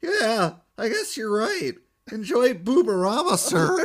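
put-on squeaky teen voice. Retelling the ticket seller's reply at the counter, in a squeaky teenager voice. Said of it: "kind of sounds like the squeaky teenager".

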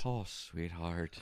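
put-on Irish accent. Retelling what a woman said during sex, in a fake Irish accent. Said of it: "In a fake Irish?".

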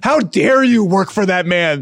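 high, loud, drawn-out berating scream. Retelling how a GM's wife berated the speaker from the sidelines, imitating someone screaming. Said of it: "screaming at me from the sidelines".

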